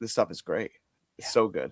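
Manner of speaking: ordinary talk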